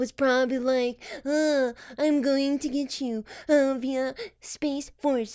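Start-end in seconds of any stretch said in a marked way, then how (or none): 1.2-5.4 slow, halting, drawn-out delivery, lingering on uhs. Joking about Space Force being laughed at: Donald Trump impression. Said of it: "That's a pretty good impression".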